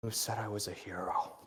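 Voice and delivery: quiet menacing mutter. Foot on a fallen paladin's chest, sword raised, muttering in a deeper, calm, menacing voice. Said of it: "mutters in a bit of a deeper, more calm and menacing voice".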